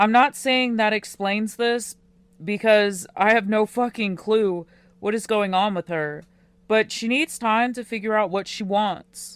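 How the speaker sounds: plain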